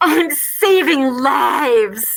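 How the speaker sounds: loud, heavily muffled voice. Retelling a masked woman in a ham store turning around, imitating a muffled masked voice. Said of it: "through her like muffled face goes".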